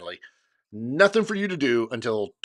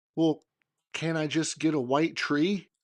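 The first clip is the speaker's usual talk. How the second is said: mock, sugary, sweetest possible voice; 3 semitones higher, 4 dB quieter than usual. Retelling what she asked next, imitating the sweetest voice. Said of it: "In the sweetest voice ever".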